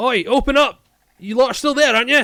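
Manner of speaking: very loud, high-pitched heavy Scottish brogue. Narrating someone crashing at the door for the other players, thick Scottish brogue. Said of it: "you hear in a thick Scottish brogue".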